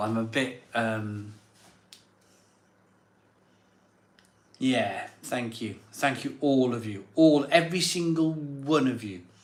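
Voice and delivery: touched, heartfelt, emotional, moved delivery. Thanking viewers on a live stream, emotional. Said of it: "I'm a bit emotional".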